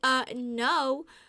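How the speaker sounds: flat, loud, blunt delivery. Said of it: "I was like".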